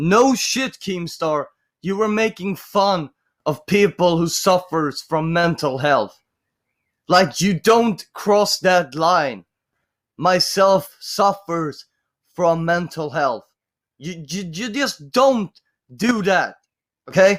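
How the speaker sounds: heated, fed-up, angry, pissed-off tone. Reacting angrily to a clip making fun of mental health: angry. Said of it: "I'm gonna be pissed. I need to calm my tits".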